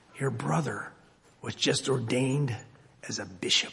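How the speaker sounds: low, hushed half-whisper, very close. Telling a story, the speaker acts out Satan at the monk's ear: retold half-whisper. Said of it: "He goes over and he leans over, and to the monk's ear, he whispers".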